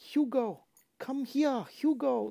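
put-on drawn-out, very high, slow French girl calling voice. Praising the voice actors, imitating how the girl calls her brother, in a french girl voice. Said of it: "she sounded like a French girl".

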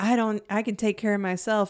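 ordinary talk

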